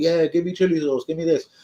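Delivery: loud rowdy put-on voice. Retelling young customers ordering kebabs: imitating loud customers. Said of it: "they've all been a bit loud".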